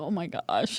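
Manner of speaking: spooked, shocked, freaked-out exclamation. Retelling how the medium reacted when the spirit came: imitating someone freaked out. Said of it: "she was really freaked out".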